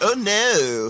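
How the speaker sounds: put-on very high-pitched, weird-sounding Valley accent. Mocking an actor's attempted accent in a film: imitating Jon Cryer's weird Valley accent. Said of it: "John Cryer's like".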